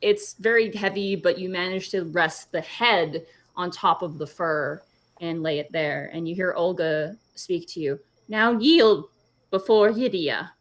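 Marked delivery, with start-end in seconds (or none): 8.3-10.4 put-on high, raised-pitch old lady voice. Narrating a scene where Olga speaks to the listener, in Olga old lady voice. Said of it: "My old lady voice is a bit scarbled".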